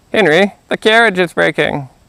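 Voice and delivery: high little frog character voice. Reading a fairy tale aloud, the narrator voices the king's son crying out: frog voice. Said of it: "He probably doesn't get the frog voice anymore".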